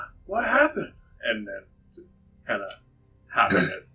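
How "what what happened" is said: very high, youthful voice. Game narrator voices someone reacting after the town master is carried out: younger voice. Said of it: "you hear a younger voice going".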